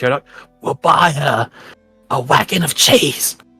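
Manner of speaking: whispered aside. Voicing a character who goes over to another character, whispering. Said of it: "whispers to you".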